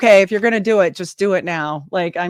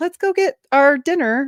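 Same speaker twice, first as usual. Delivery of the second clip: raised voice, sugary and overly polite; 8 semitones higher than usual.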